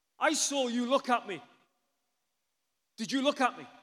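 wild, accusing, loud, high, drawn-out shouting. Retelling how the husband in the door frame confronted them, imitating a man shouting. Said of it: "And he starts shouting".

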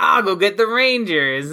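pitch lifted into a character. Retelling a scene, the speaker quotes Elgar in an Elgar voice. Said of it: "that's my Elgar voice".

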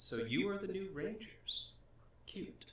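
very high feminine voice. Narrating a scene to the players, voicing a woman they hear: feminine voice. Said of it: "you hear a feminine voice say".

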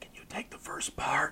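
soft, unvoiced, pleading whisper. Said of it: "I leaned over and whispered to Bruce".

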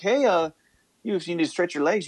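put-on heavy, thick Canadian accent, quick and high. Speaker retelling what they said at the fuel stop, thick canadian accent. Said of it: "with a really thick Canadian accent saying".

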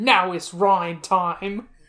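slow, loud video game announcer call. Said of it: "somebody will go".

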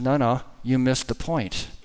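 usual speaking voice

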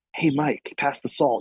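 acted hushed whisper. Describing a character who never talks, acting out a whisper. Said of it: "So he just whisper like".

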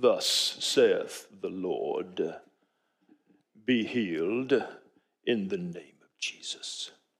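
arch Shakespearean, very low, very slow, hushed. Speaker mocking a religious healing performance, in an arch Shakespearean voice. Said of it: "my arch Shakespearean voice".

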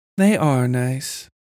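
partly to herself. A woman answers a man who called them nice; half to herself. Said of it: "to herself as much as him".

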